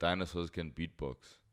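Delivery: ordinary talk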